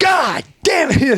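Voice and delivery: very high, freaked-out outburst. Retelling an officer's reaction to a confession: imitating someone freaking out. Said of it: "freaks out".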